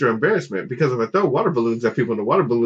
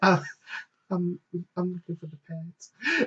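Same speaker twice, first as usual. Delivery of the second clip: whisper, higher and quieter; 6 semitones higher, 8 dB quieter than usual. Retelling asking a store clerk for something: imitating own whisper. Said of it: "And I'm just whispering".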